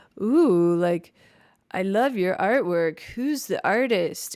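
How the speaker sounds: put-on awkward, cringy flirting tone. Retelling what a guy said about the artwork: imitating a guy's cringy compliment. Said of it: "The guy would be like".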